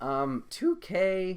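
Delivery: loud voice cracking up very high in pitch. Talking about a basketball game, the voice cracks while saying its name. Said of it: "that was a voice crack".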